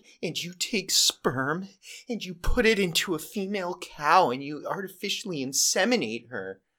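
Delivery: acted near-tearful voice, high and slow. Retelling an Oscar acceptance speech, imitating Joaquin Phoenix almost crying. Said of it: "and he's almost crying".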